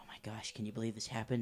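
hushed whisper. Voicing townsfolk in a crowd at a defaced memorial: whispering townsfolk. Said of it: "people are whispering, like".

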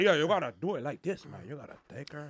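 insistent, pushy, bossy instructor voice. Imitating a dance instructor who grabs a partner and gives orders. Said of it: "grab my girl and be like".

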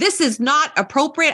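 mock very high, shrieking, high-pitched screaming. Retelling catching teens saying something cruel: retelling own screaming. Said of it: "I started screaming at both of them".

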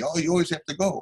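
high, aggrieved, grumbling, complaining yell. Retelling the grandmother's reaction to hanging up for work; retelling a yell. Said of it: "she yells at me".

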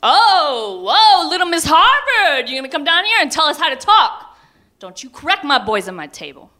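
very high booming voice, long drawn-out "oh". Retelling a father interrupting at the breakfast table: imitating dad's booming voice. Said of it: "in that booming voice of my childhood".

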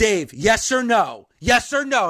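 ordinary talk, nothing marked

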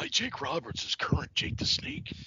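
breathy, whispered character voice. Showing an impression of the wrestler: Jake Roberts impression. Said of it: "I do a fantastic Jake Roberts".

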